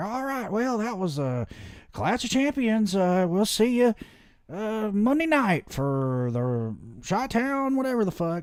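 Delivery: very high, slow, drawn-out announcer voice. Retelling how the announcers closed a chaotic show: imitating the announcers. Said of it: "you just hear 'em like".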